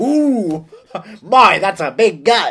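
loud, drawn-out, hammy surprised reaction. Joking about being edited into films, doing a reaction shot: hammy movie reaction shot. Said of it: "I'll do some reaction shots".

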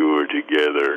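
really low voice. Recounting a dream, quoting what was said in a really low voice. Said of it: "he had a really low voice".

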